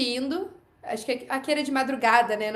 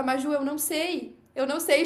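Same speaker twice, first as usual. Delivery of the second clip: slow, tearful, put-on crying voice; 3 semitones higher than usual. Retelling a colleague's reply about what happened, imitating someone crying.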